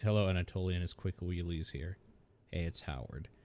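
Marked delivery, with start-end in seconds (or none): 2.5-3.3 low, soft, mournful and downcast voice. Howard calls on the phone: sad voice. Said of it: "Oh no, sad voice".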